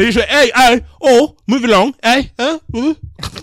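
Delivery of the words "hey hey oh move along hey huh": loud, high, barked mock British cop accent. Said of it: "that's the best accent you've ever done".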